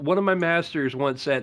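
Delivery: ordinary talk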